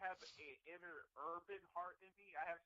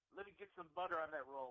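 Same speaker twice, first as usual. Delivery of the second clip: normal talking voice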